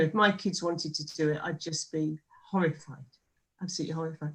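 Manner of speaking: soft voice with emotion breaking through. A parent talks about their kids' safety; getting emotional. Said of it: "you can hear I'm getting emotional now".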